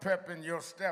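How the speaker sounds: ordinary talk, nothing marked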